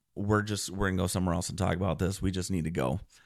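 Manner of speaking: ordinary delivery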